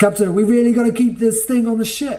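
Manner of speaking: very high, high-pitched called-out shout. Voicing a crewmate calling out to the captain: crewmate shouting. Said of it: "one of the crewmates shouts out to you".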